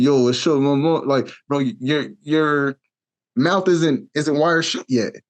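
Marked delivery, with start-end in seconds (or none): 0.0-1.0 heavy, overdone, deep New York drawl, laid on thick. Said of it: "New York accent, still kinda have a deeper voice".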